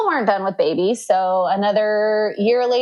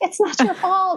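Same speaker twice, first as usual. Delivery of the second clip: very high, strained, reassuring voice. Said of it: "I'm like".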